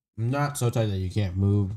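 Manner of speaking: ordinary talk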